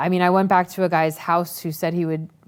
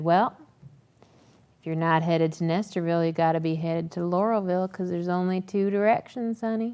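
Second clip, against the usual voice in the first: put-on smirking drunk man voice, quieter; 5 dB quieter than usual. Retelling a drunk driver smirking as he speaks: imitating a smirking creepy man. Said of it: "he smirked at me".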